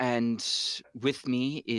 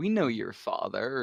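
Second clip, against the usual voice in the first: ordinary talk, nothing marked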